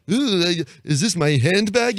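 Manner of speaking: put-on loud, condescending baby voice. Describing an old prop comedy act: Howie Mandel condescending baby voice. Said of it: "a condescending baby voice".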